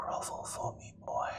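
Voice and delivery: hushed, very soft, close whisper. Game master voicing a character holding the player by the neck, whispering into the ear. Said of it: "as he whispers into your ear".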